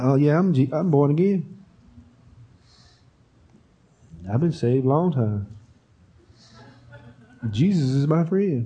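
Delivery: lukewarm, half-hearted, unconvinced, going-through-the-motions delivery. Mocking a believer who speaks about faith without conviction: unconvinced, half-hearted tone. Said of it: "talk about your faith in that same manner".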